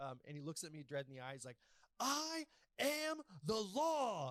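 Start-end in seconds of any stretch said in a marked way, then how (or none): 2.0-4.3 shrill, booming, slow yell, with law stretched. Retelling the one time he yelled from across the room: imitating someone yelling. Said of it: "this is the only time that man has ever yelled at me".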